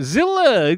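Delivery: high, loud mock Yiddish-inflected accent.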